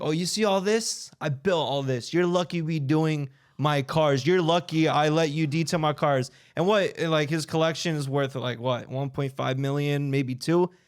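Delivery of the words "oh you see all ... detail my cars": mock arrogant, bragging tone. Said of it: "He's like".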